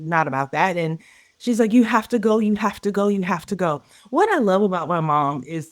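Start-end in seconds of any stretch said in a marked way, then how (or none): 1.7-3.8 put-on hysterical, tearful crying voice, pitched higher. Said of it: "just hysterically crying".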